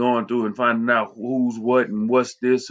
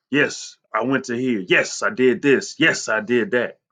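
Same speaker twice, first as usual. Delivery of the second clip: put-on proud tone. Showing how a writer proud of his accomplishments sounds: put-on proud tone.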